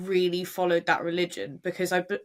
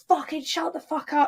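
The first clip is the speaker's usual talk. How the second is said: put-on very high, shrieking screech; 9 semitones higher, 3 dB louder than usual. Retelling how a mother yells at her kids: imitating someone screaming. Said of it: "screaming at her kids".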